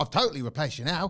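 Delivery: clumsy, badly done put-on Australian accent, pitched high. Voicing what Fletcher might say after beating the title challenger: bad Fletcher Australian impression. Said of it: "in his Australian accent apparently".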